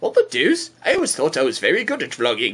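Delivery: silly cartoon baby voice, pitch swinging up and down. A vlogger speaks as Stewie on the vlog: Stewie voice. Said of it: "you have a stupid Stewie voice".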